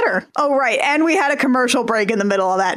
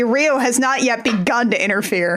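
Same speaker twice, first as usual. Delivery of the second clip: normal talking voice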